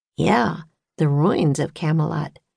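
ordinary delivery

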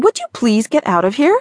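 terse, sharp, snapping tone. A woman snaps at a man who is dripping all over the floor. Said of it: "Alex snapped".

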